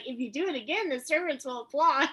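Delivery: mocking, sarcastic jab. Retelling a scene where Marta teases someone: sarcastic Marta voice. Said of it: "can't resist being sarcastic and be like".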